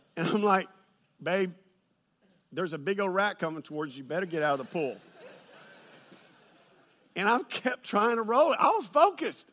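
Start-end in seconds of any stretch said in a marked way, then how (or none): 1.2-5.0 play-acted calm, steady, low, soft, unbothered tone. Retelling what he said to his wife when she saw a rat, acting out speaking calmly.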